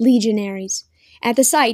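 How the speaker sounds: ordinary delivery, nothing marked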